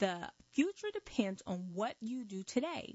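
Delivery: normal talking voice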